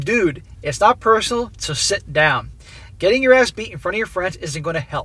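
normal talking voice

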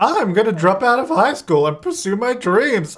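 high, loud, mocking voice. Doing an impression for the character Hillary: Addison impression. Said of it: "I better do an impression".

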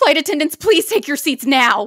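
put-on panicked, very loud, high, terrified voice. Retelling a flight attendant's announcement during turbulence: imitating a terrified flight attendant. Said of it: "I've never in my life heard a flight attendant so terrified".

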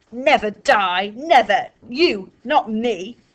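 very slow, loud, drawn-out snarled words. Ellie Mae, held by Fliss who warns her of that room, answers; snarling. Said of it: "Ellie Mae snarled".

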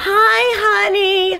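high, whining, clingy voice. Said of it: "and she was all".

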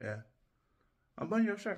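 suggestive, insinuating tone. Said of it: "Why are you saying it like that?".

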